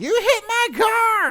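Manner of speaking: very high, very loud, very slow, swooping, drawn-out yell. Retelling a lady yelling at them, imitating a yelling lady. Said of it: "And she keeps going".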